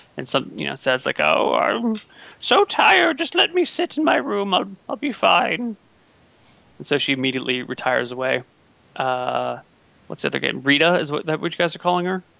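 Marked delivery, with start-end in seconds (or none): 1.2-5.8 put-on very high, slow, drawn-out old crone voice. Retelling a game scene where a character retires to her room, Carla's old crone voice. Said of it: "talks with like an old crone's voice".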